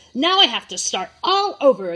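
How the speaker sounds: loud and angry tone. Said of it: "I made my voice like the character".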